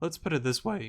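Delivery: voice cracking. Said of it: "Voice crack there".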